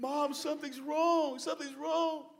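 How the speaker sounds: put-on, very high, tearful bawling. Retelling a sister in the kitchen calling to mom: imitating someone bawling. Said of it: "she's bawling to my mom".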